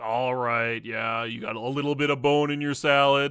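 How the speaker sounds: mock put-on attitude. A customer retells talking to the restaurant manager, imitating the manager's attitude. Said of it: "she has like the same attitude".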